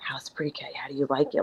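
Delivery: put-on whispering. Retelling staff secretly asking about the new class: imitating someone whispering. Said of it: "whispering to me like I went to the dark side".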